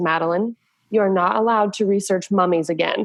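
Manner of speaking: put-on very serious tone. Retelling what a second-grade teacher said: imitating a teacher speaking very seriously. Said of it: "she very seriously goes".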